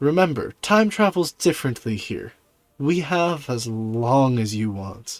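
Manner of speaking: deeply satisfied, very pleased, delighted tone. Game master voicing the patron speaking to a player's character, very pleased tone. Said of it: "you hear a very pleased tone from your patron".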